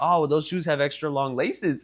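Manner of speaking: plain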